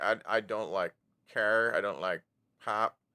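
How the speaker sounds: ordinary talk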